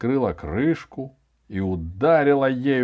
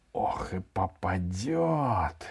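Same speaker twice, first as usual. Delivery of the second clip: low, frightened whisper with попадет drawn out; 6 semitones lower, 10 dB quieter than usual. In a read story, a character returns to the kitchen: frightened whisper. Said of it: "испуганно прошептал Иван".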